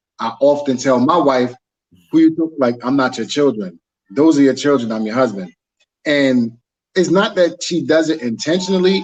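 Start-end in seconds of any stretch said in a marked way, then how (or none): none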